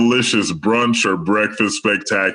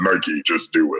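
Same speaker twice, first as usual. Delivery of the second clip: very deep bass demonic voice; 4 semitones lower than usual. Showing the voiceover read to avoid: Darth Vader voice. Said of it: "I'll go full on Darth Vader on 'em".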